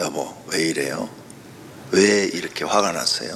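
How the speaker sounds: voice brought down. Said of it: "이렇게 목소리를 낮춰서 얘기해라".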